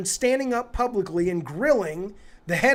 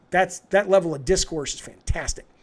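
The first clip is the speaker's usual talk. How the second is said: usual speaking voice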